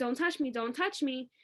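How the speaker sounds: ordinary talk, nothing marked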